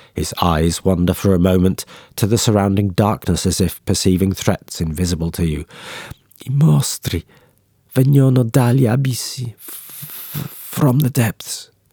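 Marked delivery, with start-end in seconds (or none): 6.5-11.7 drawn-out, stretched delivery. A dying man on the muddy ground speaks his last words: murmuring with final breath. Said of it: "he murmurs in a final breath".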